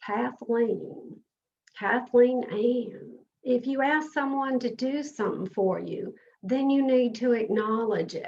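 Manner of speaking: put-on Southern American accent. Retelling what your grandmother used to say to you, in her Southern accent. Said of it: "In her best Southern accent".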